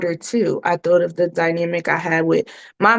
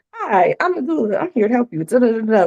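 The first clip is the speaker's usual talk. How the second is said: put-on, polished, salesy commercial-style delivery; 5 semitones higher than usual. Contrasting old and new client greetings: imitating own commercial-sounding greeting. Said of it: "More commercial sounding".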